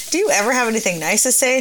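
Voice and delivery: ordinary delivery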